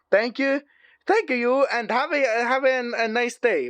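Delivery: spoken with Italian accent. Closing out the Angry Birds plush collection, Italian accent. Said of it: "Why am I doing the Italian accent?".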